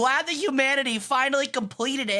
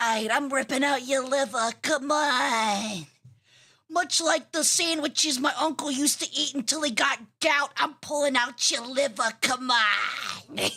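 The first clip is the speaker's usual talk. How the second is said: New Jersey accent. Playing your uncle from Jersey in an ASMR bit, with a Jersey accent. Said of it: "with a Jersey accent".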